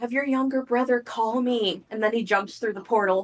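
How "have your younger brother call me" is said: hushed whispering. A character hands another a note and speaks to him before leaving, whispering. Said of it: "whispers to Chimp".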